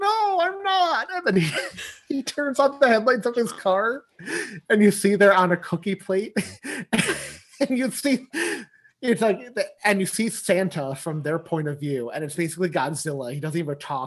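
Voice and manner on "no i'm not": very high, slow, frightened squeak. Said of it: "And he's like".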